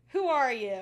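accusatory tone. Introducing a special guest expert, asking who they are, accusatory. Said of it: "I didn't mean to sound so accusatory".

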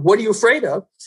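acted-out yell. Telling a story about a man near death, acting out what they yelled: retelling a yell. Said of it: "I yelled".

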